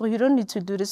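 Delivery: soft-spoken, mild, gentle voice. Retelling how her mom corrects people: imitating a soft voice. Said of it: "with a soft voice".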